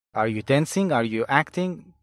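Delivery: plain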